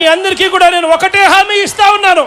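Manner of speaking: loud yelling.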